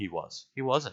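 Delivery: plain reading voice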